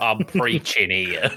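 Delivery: heavy put-on Chicago accent. Acting out a priest answering a confession, in a put-on Chicago accent. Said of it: "the Chicago accent that you do".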